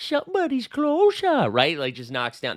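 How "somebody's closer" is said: intentionally poor squeaky rendition. Imagining a player's hot start, doing a terrible Happy Gilmore impression. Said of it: "That was a terrible impression".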